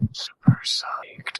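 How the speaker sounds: whispery from excitement. Agreeing with a co-host about an awaited project: excited whisper. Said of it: "I get whispery when I get excited".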